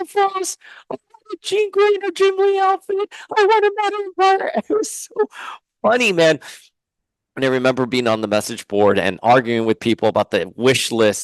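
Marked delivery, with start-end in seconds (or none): 0.0-4.5 small squeaky voice, very high pitched. Retelling own past requests on a figure wish list, in a squeaky little voice. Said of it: "like with my squeaky little voice".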